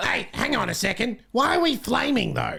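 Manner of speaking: very high, creaky, raspy bird voice. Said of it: "That was so hard to do that voice".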